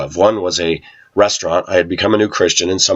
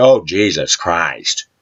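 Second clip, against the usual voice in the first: acted, sudden, mild blurted outburst. Retelling how a boss walked into the room: imitating boss saying it loudly. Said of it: "very loudly say".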